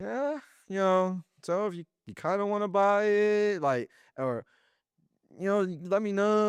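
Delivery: put-on very high, slow, unsure, stumbling stammer. Describing salespeople who falter when asking for the money, imitating unsure stuttering. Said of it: "they start stuttering and they're just like very unsure".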